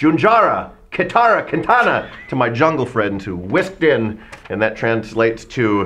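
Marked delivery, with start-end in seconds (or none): 0.0-2.1 high-pitched, loud radio announcer calling out. Retelling calling out to jungle friends, in best radio voice. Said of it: "with my best radio voice".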